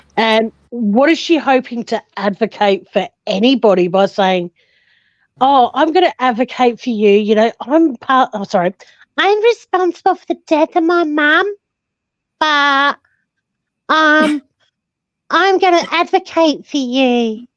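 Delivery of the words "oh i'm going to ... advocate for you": poorly done put-on woman's voice, pitched up. Acting out what she might say as an advocate, poor impression of her voice. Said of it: "I can't do her voice very well".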